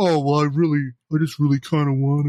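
mock whiny pleading whimper, close to crying. Retelling a film scene where he wants cosplay: imitating whining and crying. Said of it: "he starts whining and crying".

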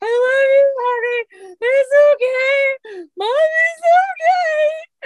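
acted, high, loud, very slow bawling, okay stretched. Retelling breaking her nose, the mother comforts her daughter: retelling bawling in pain. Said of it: "And I'm like bawling because of the pain".

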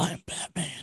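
breathy, hushed, whispered voice breathed out. Quoting a famous movie line after another speaker declines to do the voice: Batman voice. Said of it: "I can't do the Batman voice".

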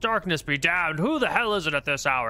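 angry, loud, shouted cursing. A lord woken late at night shouts at the caller below, angry Lord Campbell voice. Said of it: "it sounds like an angry Lord Campbell".

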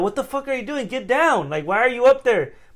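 very high, shrill, loud shouting. Speaker retells yelling at a girl hanging on a door, retelling a yell. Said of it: "but I'm yelling like".

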